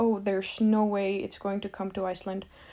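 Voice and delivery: ordinary talk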